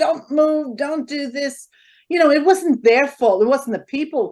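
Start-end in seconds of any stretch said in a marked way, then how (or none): 0.0-1.7 shrill, prolonged screaming. Recalling a man screaming orders at musicians, imitating someone screaming. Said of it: "he's screaming at everybody".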